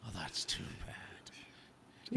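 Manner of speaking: slow, whispered bad-cop voice. Repeating the other speaker's quote: Liam Neeson bad cop impression. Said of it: "He was both good cop and bad cop".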